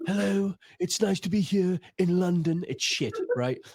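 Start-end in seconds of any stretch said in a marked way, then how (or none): 0.0-2.6 slowed-down, deliberate narrator voice, every word separate. Showing how to talk at southern comedy gigs: slowed-down David Attenborough voice. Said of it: "speak like I'm David Attenborough".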